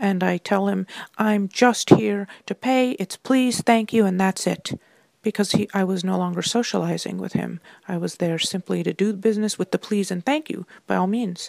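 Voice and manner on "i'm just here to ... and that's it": firm clenched-teeth talk, slower pace. Retelling what you told him after getting angry, through clenched teeth. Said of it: "kind of with teeth clenched".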